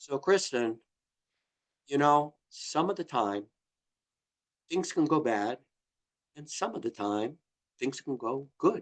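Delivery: very slow, soft, stretched-out talking. Identifying as a nine, the speaker addresses Kristen, talking very, very slowly. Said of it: "they talk very, very slowly".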